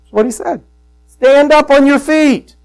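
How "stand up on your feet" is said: loud, raised, commanding shout. Retelling a command an apostle gave to a man in front of him, calling it out in a loud voice. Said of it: "he says in a loud voice".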